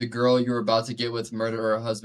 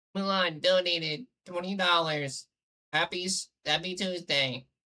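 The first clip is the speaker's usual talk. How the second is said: fake robotic computer voice, higher; 7 semitones higher, 4 dB quieter than usual. Reading a donation aloud in place of the broken bot: imitating a text-to-speech voice. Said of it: "I'll do the T T S voice".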